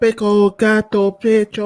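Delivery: high, slow, drawn-out mock Japanese dub gibberish.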